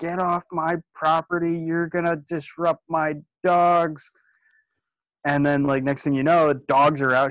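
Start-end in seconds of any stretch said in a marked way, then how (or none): 0.0-4.1 put-on screaming woman voice, high, cross, stretched out. Retelling how a woman came out of her house at the kids, imitating her screaming. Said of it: "She'd come out of her house screaming".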